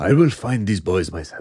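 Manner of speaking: suave, smooth movie-star voice impression.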